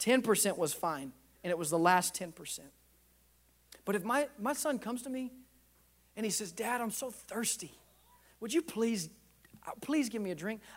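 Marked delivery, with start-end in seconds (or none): 6.5-10.6 mock pleading and grovelling, quieter. Dad acting out his son asking for a drink, imitating a child pleading.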